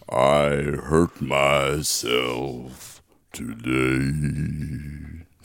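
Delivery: very deep, very slow voice, last word stretched. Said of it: "So I can do [name]".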